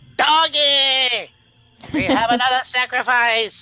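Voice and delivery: shrill goblin drawl, very high pitch and slow. Voicing a goblin that spots a sneaking player: goblin voice. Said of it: "the goblin ... spins around and looks at you, and he goes".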